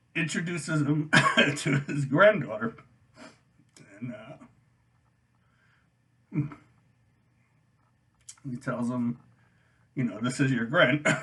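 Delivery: overcome with emotion. Retelling a movie ending to viewers, overcome with emotion. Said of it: "way too emotional talking about this".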